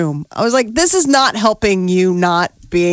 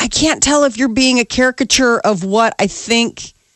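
ordinary delivery

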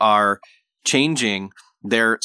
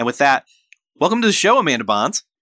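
normal talking voice

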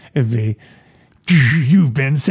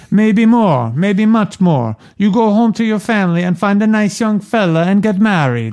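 put-on heavy Italian accent laid on thick, pitched up; 7 semitones higher than usual. Reading aloud, the old lady answers Kay about Michael; very strong Mama Corleone accent. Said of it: "I am going to do a very strong Mama Corleone accent".

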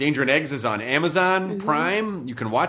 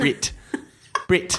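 New Zealand accent. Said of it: "lock into the Kiwi accent is just to do Jermaine saying Brett's name".

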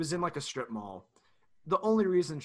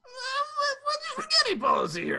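very high, swooping put-on voice, what drawn out; 4 dB louder than usual. Saying a line for an Always Sunny bit in a Charlie Day voice. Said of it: "say it in a Charlie Day voice".

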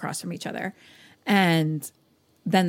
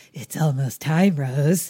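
put-on demon voice, much lower in pitch; 2 semitones lower, 4 dB louder than usual. Retelling a story where the therapist speaks to rose; demon voice. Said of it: "the therapist has a demon voice".

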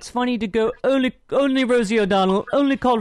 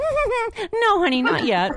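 very high, slow, drawn-out, swooping sing-song cartoon housewife; 11 semitones higher than usual. Teasing someone by repeating their reply to a question about the police, in a Betty Rubble voice. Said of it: "your Betty Rubble voice".

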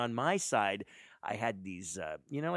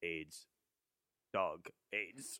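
dry, flat, expressionless deadpan delivery; 3 semitones lower, 6 dB quieter than usual. Retelling what a dog walker said, totally serious: imitating a deadpan delivery. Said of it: "he goes like this".

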